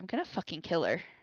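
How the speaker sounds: soft, hushed half-whisper under the breath. Telling a party member in character a threat: half-whispering. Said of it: "and I just whisper".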